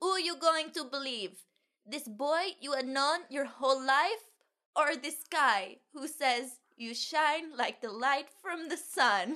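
clumsy put-on Italian accent, high and slow. Quoting a film character's line in a bad Italian accent. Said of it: "Your impression of an Italian person is as bad as [name]'s impression of an Italian person".

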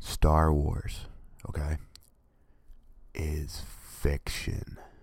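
slow whisper, right into the microphone. Speaking to fans upset about it, leaning up close to the microphone, close-mic whisper. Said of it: "I'm going to whisper this stuff".

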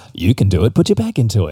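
announcer-style movie voiceover narration voice. Asked by a co-host to say the line in the voiceover voice; voiceover voice. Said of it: "Can you say it in the voiceover voice?".

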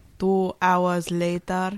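cartoon title-card narrator voice. Recalling a SpongeBob bit about a long wait: imitating SpongeBob time card. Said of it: "SpongeBob thing where it's like".

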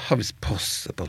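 mock resigned, fed-up tone. Recounting a phrase said in many tones, here mock-resigned. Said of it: "litt sånn oppgitt".

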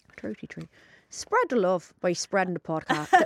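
low, put-on Irish accent. A podcast host doing the closing plug, trying an irish accent. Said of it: "Let me just try Irish".

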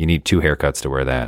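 quiet mumbling, half to oneself. Retelling mom's remark on short skirts: imitating mom mumbling under her breath. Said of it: "kind of mumble under her breath".

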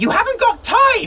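furious, angry, high-pitched shout. Turning round on Einstein, who rattles off Czech: angry shout. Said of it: "I'm going to turn round and angrily shout".

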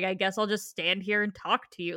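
put-on dry, irritated cat voice. Retelling an animated cat's line from the show: imitating a dry, irritated cat. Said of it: "dry and, like, irritated".

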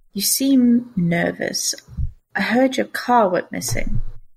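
voice brought down. Telling the story, the narrator voices a character's line in a lowered voice. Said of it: "lowers his voice and says".

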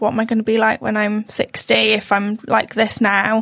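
ordinary talk

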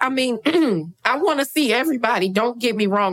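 high, eager voice breaking and cracking. In a group conversation about a K-pop concert, the speaker talks, voice cracking. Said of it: "My voice is cracking".

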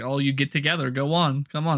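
usual speaking voice

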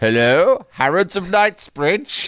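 posh telephone voice. Retelling how their dad answered the house phone, in dad's put-on posh voice. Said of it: "my dad would answer in a posh voice".

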